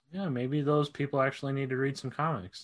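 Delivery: ordinary talk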